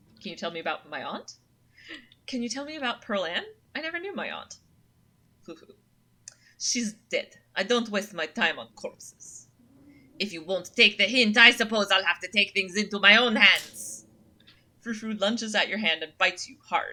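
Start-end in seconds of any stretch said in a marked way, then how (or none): 6.6-14.0 loud, bad put-on French accent. Reading a snobby cat's lines in a game: bad French accent. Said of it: "It's supposed to be French".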